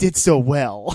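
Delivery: very loud, booming, heavy sarcasm. Saying how well a movie did, sarcastic. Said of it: "and I say this sarcastically".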